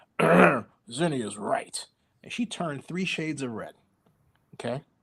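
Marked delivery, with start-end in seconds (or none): 0.2-1.9 heavy chain-smoker's cigarette voice. Retelling what Glenn said on the speaker: chain-smoking cigarette voice. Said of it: "with his chain-smoking cigarette voice".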